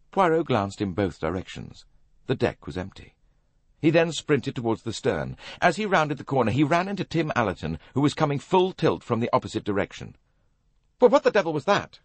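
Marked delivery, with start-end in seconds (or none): 11.0-11.9 very high, out-of-breath startled outcry. Tim Allerton, coming full tilt, runs into Poirot and cries out breathlessly. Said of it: "cried Tim breathlessly".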